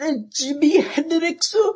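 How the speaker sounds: worst fake Japanese accent, very high. Retelling a friend's joke guess at another girl's answer, in the worst japanese accent ever. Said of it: "in the worst Japanese accent ever".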